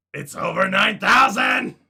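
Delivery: very loud, booming, very high belted shout. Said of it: "you sound like Nappa".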